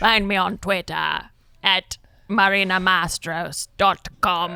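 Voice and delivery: slight, vague put-on British accent. Podcast guest in the outro, plugging where to find them, slight english accent. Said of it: "I like the little spice of English accent".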